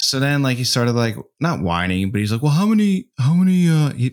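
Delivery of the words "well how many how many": put-on laid-back movie-star voice, higher pitch. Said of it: "my son sounds like Keanu Reeves".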